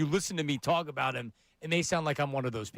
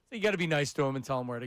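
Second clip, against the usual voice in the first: ordinary talk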